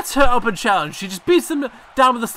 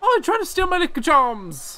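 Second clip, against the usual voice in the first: fake, high-pitched, not-quite-right Irish accent; 6 semitones higher than usual. Retrying after admitting the first attempt wasn't irish at all, bad irish accent. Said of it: "That's not at all Irish".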